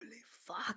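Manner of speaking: stunned whisper.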